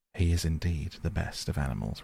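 usual speaking voice

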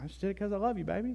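tender affectionate tone. Talking about love at church, the speaker demonstrates the reply in a sweet loving tone. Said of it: "In that tone, too".

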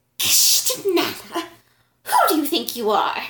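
loud, high, angry snake-like hiss. Narrator voicing the chief of the queen's women barring the way: hissing like a snake. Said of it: "hissing like a snake".

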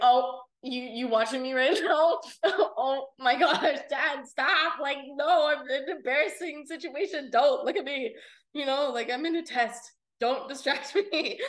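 loud, high, giggly, laughing, joking banter. Retelling own dark-humor jokes to Dad: retelling own laughing joke. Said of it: "I'll just laugh and I'll be like".

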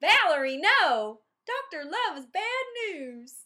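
put-on thick Southern accent, very high, loud, slow. Imitating the other speaker talking at the screen as a child: imitating a thick Southern accent. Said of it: "the thick Southern accent back then".

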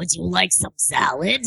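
female dragon character voice. Showing the voice they do for their lady dragon: Beerda voice. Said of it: "Beerda talks like this".

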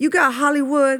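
put-on American vernacular accent and way of talking. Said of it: "with this kind of accent".

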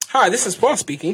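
formal, professional voice. Asked to show his code-switching voice, the speaker answers a mock phone call: formal code-switching phone voice. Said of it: "hear your code switching voice".

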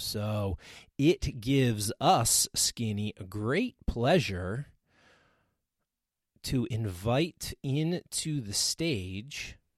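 very slow, stretched-out, drawn-out delivery. A podcast host invites a returning guest onto the stage, saying it really slow. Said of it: "You're saying this really slow".

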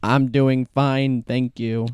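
flat, slow, mechanical robot-like delivery. Teasing a fellow speaker about how he answers every episode, imitating Ian's robotic voice. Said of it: "Like a robot".

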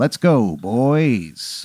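deep mountain-man voice. Retelling a scene where a giant man calls out: deep giant-man voice. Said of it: "that deep voice of that you know, giant".

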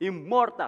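immortal given heavy emphasis. Preacher repeating a bible verse before praying, with stress on immortal. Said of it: "Let me emphasize the word immortal".

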